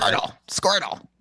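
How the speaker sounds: breathy, whispered creature call. Giving a Pokemon impression after being pressured: Squirtle impression. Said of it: "everyone give your best Pokemon impression".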